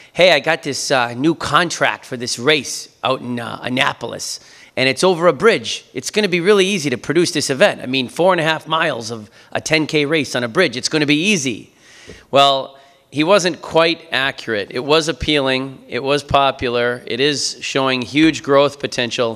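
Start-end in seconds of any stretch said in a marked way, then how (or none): 0.2-11.8 put-on Boston accent throughout. Retelling what Dave, who is from Boston, once said; Dave's Boston accent. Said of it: "So he said in his Boston accent".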